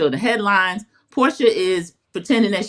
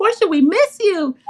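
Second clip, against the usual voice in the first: much higher, gushing, effusive producer voice. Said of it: "And production said".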